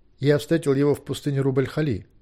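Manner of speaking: ordinary delivery, nothing marked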